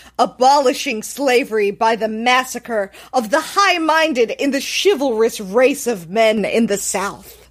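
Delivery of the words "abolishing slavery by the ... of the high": ordinary delivery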